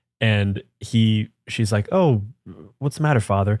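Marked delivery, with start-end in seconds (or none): 1.9-3.5 mock coy, flirty teasing with swooping tune. Retelling a woman teasing a priest, imitating flirty teasing. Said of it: "flirting with him".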